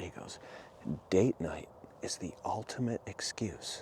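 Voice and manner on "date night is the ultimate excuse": put-on hushed, secretive tone, quieter. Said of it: "spoke like it's a secret".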